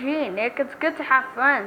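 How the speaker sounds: normal talking voice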